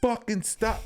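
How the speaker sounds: put-on raging yell pitched very high. Speaker recalls a clip recorded after being rage-baited, retelling an angry yell. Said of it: "I recorded a fucking clip where I'm like yelling".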